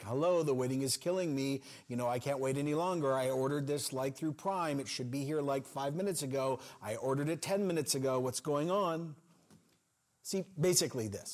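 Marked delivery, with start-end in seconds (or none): none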